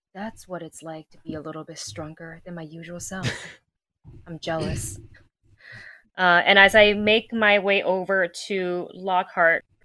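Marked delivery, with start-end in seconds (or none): 0.2-5.0 rushed, very quiet whisper under the breath. A roleplay player, in character, moving toward Lockhart: whispering under breath. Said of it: "I'm going to whisper underneath my breath".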